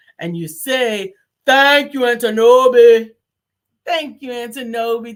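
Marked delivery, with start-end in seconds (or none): 1.5-5.2 very loud, booming put-on Nigerian accent. Speaker showing how you say the Tanobi logo line, in a Nigerian accent. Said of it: "you put on your Nigerian voice".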